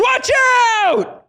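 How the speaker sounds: mock very high-pitched sudden screamed shriek. Retelling how a stranger on the street screamed a warning: imitating a man screaming. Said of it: "looks at me and screams".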